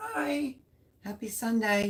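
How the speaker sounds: voice cracking high into a squeak. Greeting someone while having barely any voice left, squeaky voice. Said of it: "You like that squeak?".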